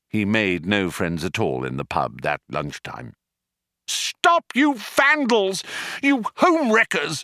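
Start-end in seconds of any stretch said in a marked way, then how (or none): 3.9-7.2 shrill bawling at a very high pitch. Running out of the pub waving a beer glass, he bawls after them.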